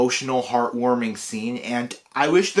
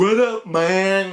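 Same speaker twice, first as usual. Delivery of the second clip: put-on high stoner-style voice; 7 semitones higher than usual. Describing a cartoon beaver voiced by Eduardo Franco, speaker does Loaf stoner voice. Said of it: "that beaver with a stoner voice".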